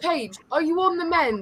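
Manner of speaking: put-on child's voice speaking with an English accent. Retelling what a babysat kid asked: imitating a child's English accent. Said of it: "the kids speak in an English accent".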